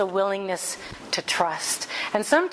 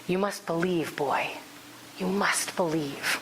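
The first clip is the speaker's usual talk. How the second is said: soft, urgent half-whisper under the breath; 3 semitones lower, 3 dB quieter than usual. Retelling a scene where a dying father half-whispers to his son; retelling a half-whisper. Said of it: "but he whispers".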